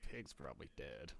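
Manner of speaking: very quiet, very low mutter under the breath. Walking away after the search, leaning in to a companion: muttered under breath. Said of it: "like under my breath".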